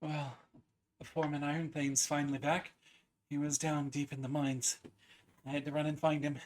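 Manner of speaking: out of breath. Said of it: "She is a little out of breath".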